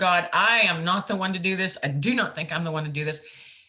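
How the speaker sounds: pleading through tears, tearful crying. Retelling a prayer said out loud while crying, reenacting own crying prayer. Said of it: "crying and I'm going".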